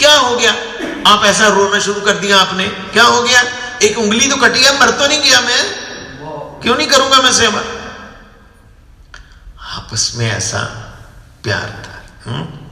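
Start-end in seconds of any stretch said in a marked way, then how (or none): 0.0-7.6 high, loud scolding tone. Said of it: "Keshav Maharaj को डांटने लगे".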